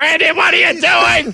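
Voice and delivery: very high, worried, scolding mother voice.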